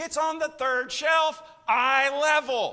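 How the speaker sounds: very loud, high holler from afar. Retelling her answer from the back bedroom; retelling a holler back. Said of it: "she hollers back and she says".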